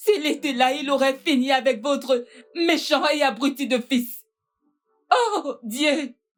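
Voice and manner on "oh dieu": high, anguished, pleading wail. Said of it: "C'est bon, calme-toi".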